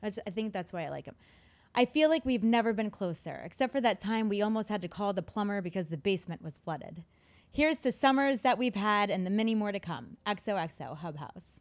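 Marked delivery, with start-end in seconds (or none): none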